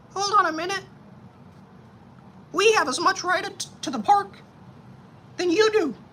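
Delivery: squeaky, very high-pitched voice. Example of the words to lose, spoken in a high-pitched voice. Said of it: "The words to lose are going to be high pitched".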